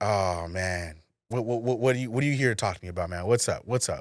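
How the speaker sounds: mock kinda aggressive, pushy confrontational tone. Retelling a tense talk with a gym member: imitating someone talking aggressively. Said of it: "kinda aggressively".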